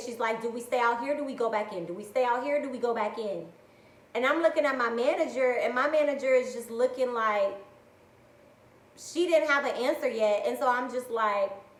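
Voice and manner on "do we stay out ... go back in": mock frantic, panicked back-and-forth looping speech. Retelling a coworker's questions during gunshots outside: imitating someone panicking. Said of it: "she's sitting there panicking".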